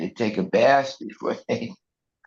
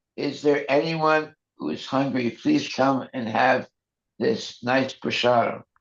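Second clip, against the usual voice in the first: ordinary talk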